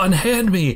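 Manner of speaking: high, commanding shout.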